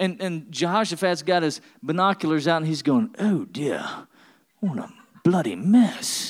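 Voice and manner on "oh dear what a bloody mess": put-on slow, drawn-out British accent. Joking about Bible stories, voicing Jehoshaphat in a British accent. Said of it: "They all talk with that accent".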